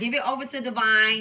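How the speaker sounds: ordinary delivery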